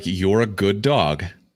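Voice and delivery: slow, mechanical, automated robot announcer voice. Describing a megaphone device that tells passing dogs they're good, automated robot voice. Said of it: "this automated robot voice".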